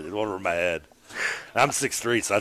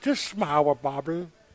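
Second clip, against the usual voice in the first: creepy, high, cooing little cartoon boy voice; 7 semitones higher than usual. Still teased by the others, the speaker keeps a creepy Bobby's World voice.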